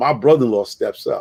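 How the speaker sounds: plain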